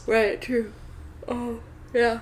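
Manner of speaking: words drawn out while yawning. Agreeing with the other speaker during a contagious yawn, yawning while talking. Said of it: "Sorry, I'm yawning".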